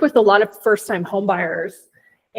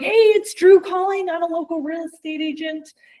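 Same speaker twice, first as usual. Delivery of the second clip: over-eager, amped-up, pitched-up voice; 8 semitones higher than usual. Retelling a teammate's cold call to an old lady, imitating Drew amped up. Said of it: "he was amping it up".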